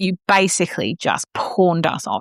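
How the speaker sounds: normal talking voice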